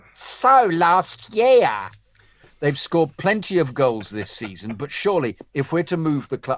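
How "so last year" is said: put-on camp voice, pitched up and raised in volume. Reading aloud an email that says to read this in a camp voice. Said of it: "say this in a camp voice".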